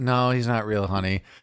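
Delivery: mock drowsy, sleepy, half-awake voice. Retelling a mother's half-asleep answer about Santa, imitating a sleepy voice. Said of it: "she just kinda sleepily went".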